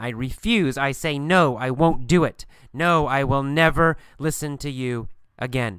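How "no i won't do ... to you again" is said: normal talking voice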